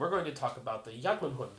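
ordinary delivery

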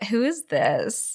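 soft, coy, innocent-sounding woman's voice. Speaker describes a coy woman in a Wes Craven film: coy impression of her. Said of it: "That's a good impression".

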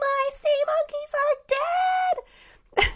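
acted child's wail, very high and very slow. Retelling screaming at a babysitter as a child: imitating own childhood screaming. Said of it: "started screaming at my babysitter".

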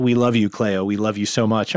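emotional, choked up, holding back tears. Quoting a film's beach scene line that moves the speaker: choked up. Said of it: "I'm getting choked up thinking about it".

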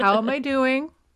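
smug, condescending tone. Imitating a show character's repeated line: imitating Cam, facetious. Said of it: "it's a facetious kind of way".

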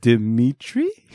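unsure, doubtful delivery. Host teasing co-host's self-introduction, imitating Dimitri's put-on unsure 'Dimitri?'. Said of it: "You didn't sound sure, Dimitri. You go like".

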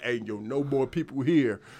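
put-on stern voice, deep. Recalling turning people away at capacity, giving a mock-stern warning. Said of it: "I was stern".

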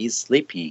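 normal talking voice

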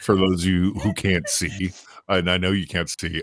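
talking through hard laughter, words broken up. Telling listeners who can't see about the laughter: laughing while talking. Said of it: "I'm laughing really, really hard".

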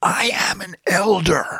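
high, very slow, drawn-out screaming shout. Recalling standing at the edge of a mesa, the speaker is retelling a scream. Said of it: "I screamed out loud".

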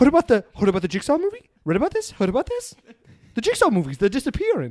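exaggerated, overdone, high-pitched sing-song delivery. Joking about Jigsaw movies: terrible Mark Wahlberg impression. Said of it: "That's a terrible impression".

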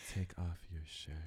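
slow, drawn-out put-on delivery. Showing listeners how she says the line, mimicking her slow delivery. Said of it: "pretty much that's how she does it".

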